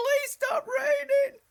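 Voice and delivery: shrill, very high, very loud scream at full volume. Retelling standing outside as the creek nearly flooded: retelling a scream. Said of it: "and I'm screaming".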